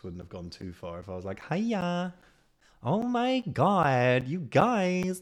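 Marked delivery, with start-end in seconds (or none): 1.5-5.2 little camp voice, very high, very slow, loud. Explaining why a Cockney impression was needed instead, in his camp boy voice. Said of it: "my little camp boy voice".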